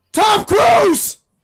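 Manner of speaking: screaming. Complaining about being attacked again for no reason: screaming. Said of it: "Don't scream so much".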